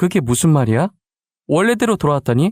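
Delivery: ordinary delivery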